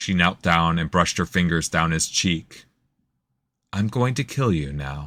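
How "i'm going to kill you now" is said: soft, gentle, hushed delivery. A narrator reading a novel voices a woman speaking to the man she will kill: hushed, gentle voice. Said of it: "Her hushed voice carried a gentleness".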